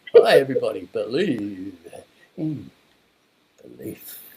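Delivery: put-on stage voice, low and loud. Showing the voice you put on for giving a speech, put-on stage voice. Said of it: "put on that stage voice".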